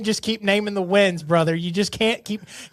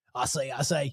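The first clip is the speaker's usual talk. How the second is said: put-on cartoon character voice; 7 semitones lower, 9 dB quieter than usual. Answering which voice the impression sounded like: Foghorn Leghorn voice. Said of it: "Foghorn Leghorn".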